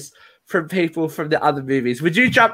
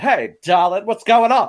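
sultry screen siren voice

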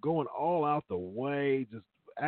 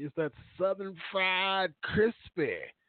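put-on woman's voice, pitched up high; 7 semitones higher than usual.

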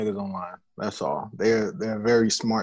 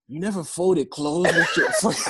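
put-on raised-pitch Spanish accent; 8 semitones higher than usual. Retelling what someone said to them face to face, imitating Puerto Rico's accent. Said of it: "I like how you said that with an accent".

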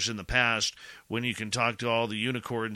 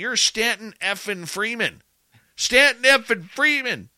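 reenacted nervous yell, much higher and louder; 11 semitones higher, 9 dB louder than usual. A nervous journalist retells what he yelled to a man, retelling his own yell. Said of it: "just let me yell something out".

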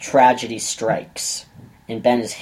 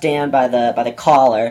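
usual speaking voice

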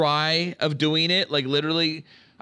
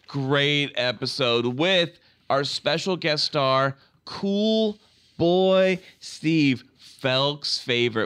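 slow, heavy, mocking sarcasm laid on thick. Speaker recapping an episode with a special guest star, sarcastic. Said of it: "You said the most sarcastic way possible".

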